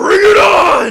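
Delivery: high, loud, drawn-out rallying battle cry.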